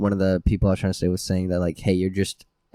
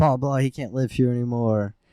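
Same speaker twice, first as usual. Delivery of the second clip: mock screaming rant, kept mild, pitched up; 5 semitones higher than usual. Retelling a stepmom's words to a dad: imitating someone screaming. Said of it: "she's screaming with my dad".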